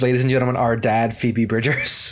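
ordinary talk

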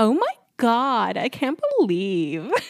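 put-on high, swooping Californian valley girl voice. Speaker says she loves mimicking Dominique, imitating Dominique's valley girl voice. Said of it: "I love mimicking Dominique because I'm like".

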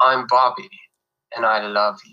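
put-on British accent. Asked by an interviewer to repeat his movie line, [name] British accent. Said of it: "can you give us a little British accent".

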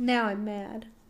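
sad-sounding, soft tone. Saying they're mad about a change, the speaker ends up sounding sad. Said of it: "You sound more sad than mad".

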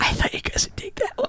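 whispering without voice.

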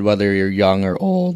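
voice breaking mid-phrase. Pitching BetStamp to listeners, voice cracking mid-phrase. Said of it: "that was a bad voice crack".

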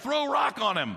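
mock scornful, dismissive, jeering tone. Retelling brothers taunting someone stuck in a pit: imitating mocking brothers. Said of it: "they're mocking him".

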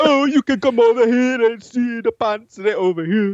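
really bad put-on Caribbean accent, very high. Acting out what a woman would say to someone, in a bad Caribbean accent. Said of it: "that was a really bad, um, yeah, like Caribbean accent".

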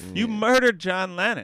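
heated, very loud angry outburst. Reacting to how another sees his life, getting a little angry. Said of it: "I'm getting a little angry here".

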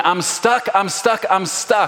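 put-on panicked yelling, high, drawn-out, repeated over and over. Retelling Riley stuck and screaming until freed, imitating Riley yelling. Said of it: "Riley's yelling".

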